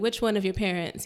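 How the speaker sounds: usual speaking voice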